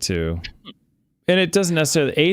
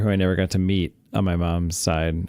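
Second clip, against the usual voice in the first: ordinary talk, nothing marked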